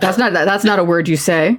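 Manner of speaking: usual speaking voice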